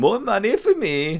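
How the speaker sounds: very high, slow, fake Swedish accent. Imitating rich Swedish pop stars in a sauna: put-on Swedish accent. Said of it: "Is that your Swedish accent?".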